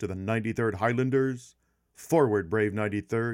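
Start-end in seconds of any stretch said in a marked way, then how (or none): none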